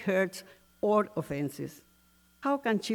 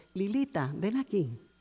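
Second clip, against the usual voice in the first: mock tender, sweet, affectionate calling voice. Recalling how her mother called her when they were at peace, imitating mother's sweet voice. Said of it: "she would call me in a sweet voice".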